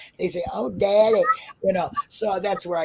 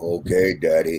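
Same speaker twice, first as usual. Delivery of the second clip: exaggerated, very low put-on deep voice. Speaker imagines her answering being called daddy, in a put-on deep voice. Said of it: "That's a deep voice".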